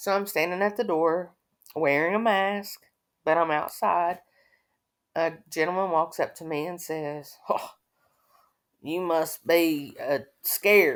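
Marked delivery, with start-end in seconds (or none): 7.5-11.0 slow, really weird, odd-sounding voice. Retelling a gentleman walking up at the door, imitating his real weird voice. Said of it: "like in a real weird voice".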